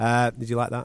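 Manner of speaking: ordinary delivery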